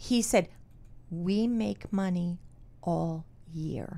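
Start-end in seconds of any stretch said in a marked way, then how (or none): 1.1-4.0 put-on soft, slow voice with heavy Italian accent. Quoting a restaurant-owning father's reply to the speaker's dad, soft with heavy accent. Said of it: "he talked very softly, very heavy accent".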